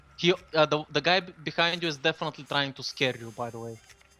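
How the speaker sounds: ordinary talk, nothing marked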